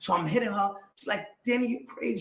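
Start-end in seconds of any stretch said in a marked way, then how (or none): 1.5-2.2 put-on tearful crying, higher pitched. Retelling what she said while she was crying: imitating someone crying. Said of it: "She's crying".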